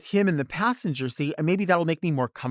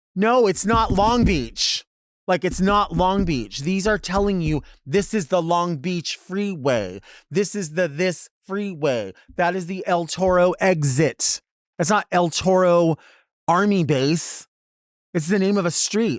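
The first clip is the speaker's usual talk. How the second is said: mock frustrated, slow, exasperated, spelled-out delivery; 3 dB louder than usual. Retelling his reply to a guy asking about Long Beach; retelling a frustrated reply. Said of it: "I started to get frustrated".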